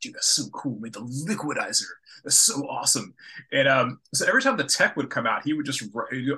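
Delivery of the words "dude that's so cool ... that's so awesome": play-acted amazed, awed, gushing dude voice. Retelling how a coworker reacted to the liquidizer: imitating an amazed coworker. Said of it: "so amazed with these".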